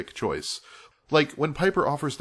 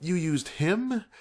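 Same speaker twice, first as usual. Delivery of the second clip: stunned, shocked, disbelieving tone; 7 semitones higher than usual. Showing another way the same line could be read, expressing shock. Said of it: "Expressing shock".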